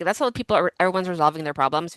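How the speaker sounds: normal talking voice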